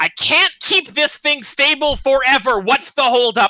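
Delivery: very high, frantic goblin screech. Game master voicing an unseen hobgoblin heard through long corridors, high-pitched frantic hobgoblin voice. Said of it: "a very uh, high-pitched, frantic hobgoblin voice saying".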